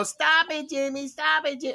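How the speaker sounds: yelling, tattling little sister voice.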